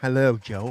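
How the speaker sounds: flirtatious, seductive, come-hither voice. Mimicking another speaker's greeting to a viewer: imitating a seductive greeting. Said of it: "Why don't you lick your lips at the same time?".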